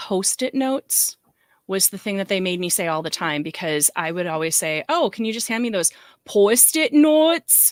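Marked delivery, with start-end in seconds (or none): 4.9-7.7 put-on ridiculous-sounding Wisconsin accent, louder and pitched up. Re-enacting what they made you say all the time, in a Wisconsin accent. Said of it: "would do my Wisconsin accent".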